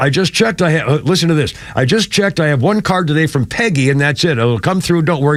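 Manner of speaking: normal talking voice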